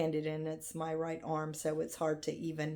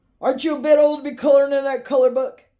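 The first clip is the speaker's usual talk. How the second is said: gruff grandfather voice, pitched up, teasing tone; 9 semitones higher, 17 dB louder than usual. Recalling her grandfather teasing her about coloring: imitating grandfather's gruff voice. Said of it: "he always had this gruff voice".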